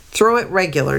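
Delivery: ordinary delivery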